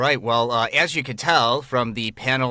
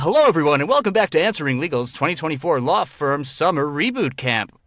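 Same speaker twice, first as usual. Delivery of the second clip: put-on announcer-style host voice; 4 semitones higher than usual. Opening a summer boot camp session: put-on host voice. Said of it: "let me get into my, uh, my host voice here".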